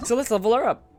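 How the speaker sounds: voice breaking mid-line. Playing a game and about to level up a character, voice cracking. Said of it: "As I voice crack".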